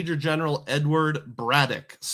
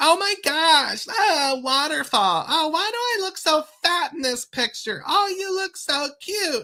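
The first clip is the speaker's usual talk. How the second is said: put-on very high, annoying, gushing teen-girl chatter; 13 semitones higher, 3 dB louder than usual. Retelling how the groups of girls at the waterfall talked: imitating annoying young girls. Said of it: "And they were just like".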